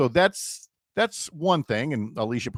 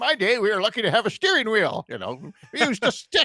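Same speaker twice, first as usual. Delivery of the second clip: put-on very high-pitched old man voice; 10 semitones higher than usual. Joking about steering wheels in the old days: put-on old man voice. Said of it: "trying not to go too old man on you going".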